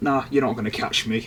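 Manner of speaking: ordinary talk, nothing marked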